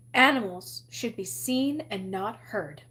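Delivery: ordinary delivery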